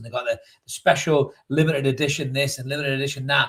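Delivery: ordinary talk, nothing marked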